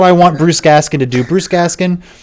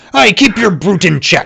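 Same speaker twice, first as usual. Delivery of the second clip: rough, scolding delivery; 3 semitones higher than usual. Voicing an innkeeper speaking to Holly: scolding innkeeper. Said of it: "The innkeeper looks directly at you, Holly, and goes".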